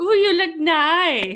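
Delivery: fake Russian accent, very slow, nicely drawn out. Imitating a Russian bot's comment on a video: put-on Russian accent. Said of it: "I don't know if that sounds Russian at all".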